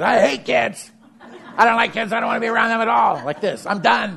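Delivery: very high, exhausted, done-with-it rant. Acting out an overtaxed friend refusing to coach: imitating Chuck burned out. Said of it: "verge of burnout, or he's living in burnout".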